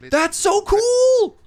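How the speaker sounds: loud shout, very high-pitched. Reacting as another speaker explains a build step: shouting. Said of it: "Sorry, sorry, I'm shouting".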